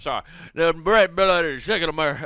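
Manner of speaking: amateur, loud put-on Cajun accent. Correcting a phrase mid-argument about guns, in a put-on Cajun accent. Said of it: "I'm trying to do a, a Cajun accent".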